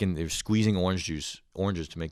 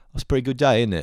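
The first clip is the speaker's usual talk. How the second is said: put-on British accent, higher pitch; 5 semitones higher, 7 dB louder than usual. Retelling a tech support call, imitating how British people talk. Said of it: "like British people, they go".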